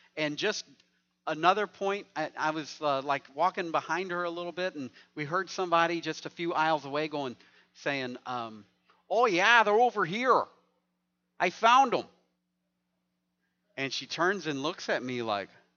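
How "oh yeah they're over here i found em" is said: put-on raised, high-pitched Wisconsin accent, called out. Retelling a shopper overheard a few aisles away: Wisconsin accent. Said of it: "that's what you sound like".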